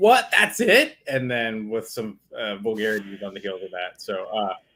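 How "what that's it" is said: play-acted very high, disbelieving, outraged yell. Sharing their reaction to a season ending, the speaker quotes themself, retelling a yell at the TV. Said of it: "I just yelled at the T V like".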